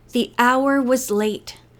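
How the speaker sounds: ordinary delivery, nothing marked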